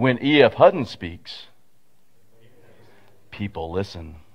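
low, echoey, disembodied voice. Retelling an old commercial, the speaker voices its disembodied line: echoey E.F. Hutton ad voice. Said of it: "in that echoey kind of voice".

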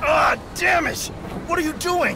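cry of pain.

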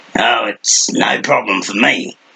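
sharp snap, very slow and drawn out. The gnome Slanter answers the group's question about the guard, snapping. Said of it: "the gnome snapped".

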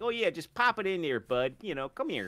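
high-pitched, laid-on put-on Canadian accent. Describing a Ryan Long bit about Canadian women, the speaker does a Canadian accent. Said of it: "that sort of accent".

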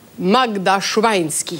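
low, put-on vampire voice. Teaching how to pronounce a surname, pretending to be Dracula: Dracula voice. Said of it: "pretend you're Dracula".

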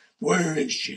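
put-on shadowy hero voice. Talking about the hero archetype live, the speaker slips into a Batman voice. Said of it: "that's my Batman voice".

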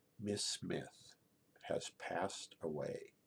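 mock soft, slow, sad whisper. Retelling what a man said to the speaker, imitating a sad, soft voice. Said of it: "in a really sad, soft voice".

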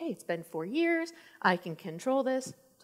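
slow, high, reassuring inner-voice style talk.

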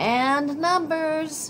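emphatic, very high, shrill and loud. Reading a story aloud, the math magician adds to a farewell shouted after a traveller: forceful. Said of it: "added the math magician forcefully".

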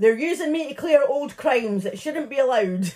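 high shouting voice. Retelling a suspect shouting at the cameras: imitating someone shouting. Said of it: "he was shouting at the cameras".

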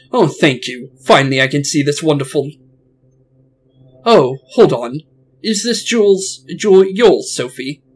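unicorn character voice. Reading a scene aloud, speaking the unicorn's line to Sophie in a unicorn character voice. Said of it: "I'm gonna say it in his voice".

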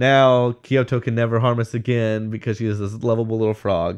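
ordinary talk, nothing marked

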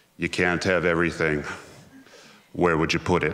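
low, flat, dead level deadpan. Opening a talk on library collections, quoting a joke as a deadpan Steven Wright impression. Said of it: "I'm going to do my best impression".

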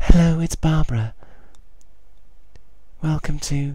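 very high, loud, put-on sultry, seductive woman voice. Playing Barbara, a swimming instructor, introducing her midnight class: Barbara sexy woman voice. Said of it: "I'm trying to do a sexy woman voice".

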